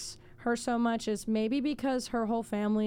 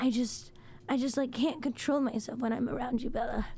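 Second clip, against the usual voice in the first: romantic vampire heartthrob voice. Describing Edward stalking Bella, the speaker does an Edward impression. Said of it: "Was that a good impression".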